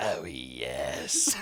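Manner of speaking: very low, drawn-out doll voice. Acting out the doll Robert answering the boy: deeper doll voice. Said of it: "the doll would respond in a different, deeper voice".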